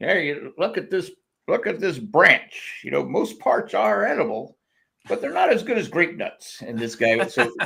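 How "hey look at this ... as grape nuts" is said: put-on pitched-up TV commercial spokesman voice, like an old ad. Retelling an old grape nuts commercial: Euell Gibbons impression. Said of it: "this old guy would walk around and go".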